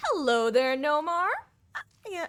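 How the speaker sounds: high, squeaky voice cracking. Greeting someone mid-talk, voice squeaking. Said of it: "my voice squeaked".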